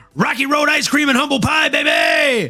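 very high cartoon shout with big pitch swoops. Host reads a comment aloud as he heard it in his head: Rick Sanchez voice. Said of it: "in a Rick Sanchez from Rick and Morty voice".

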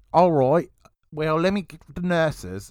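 put-on full, Australian-sounding accent. Retelling what an Irish guy said, the speaker slips into an Australian-sounding accent. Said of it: "we went full Australian there".

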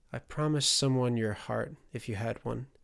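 ordinary delivery, nothing marked

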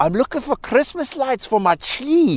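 terrible put-on Scottish accent. Retelling asking a lady in Walmart for Christmas lights, in a terrible Scottish accent. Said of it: "imitating a terrible Scottish accent".

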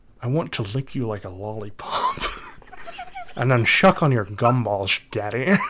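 deliberately awful, hammy film-star voice swooping all over. Saying a line requested by the other speaker: Sean Connery voice. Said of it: "In my Sean Connery voice".

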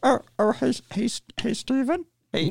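tepid, light, low-energy voice. Acting out a filmmaker calling to a friend: George Lucas impression, tepid. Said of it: "so tepid in my impression".

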